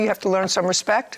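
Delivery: ordinary delivery, nothing marked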